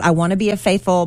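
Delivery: ordinary talk, nothing marked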